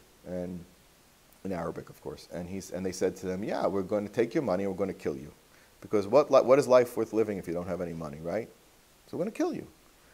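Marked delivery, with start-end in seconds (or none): 3.4-9.6 mock flat, matter-of-fact tone. Retelling armed robbers threatening a traveller: imitating matter-of-fact threat. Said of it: "Very matter of fact".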